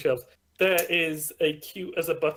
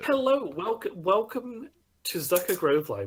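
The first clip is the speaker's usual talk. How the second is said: cheerful happy character voice, higher pitch; 5 semitones higher than usual. Voicing a librarian greeting a visitor: happy librarian character. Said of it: "a cute as a button librarian, and she looks very happy".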